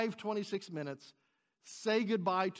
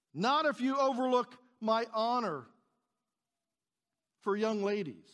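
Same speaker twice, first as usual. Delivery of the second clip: put-on loud call, higher and louder; 3 semitones higher, 4 dB louder than usual. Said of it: "he is calling out".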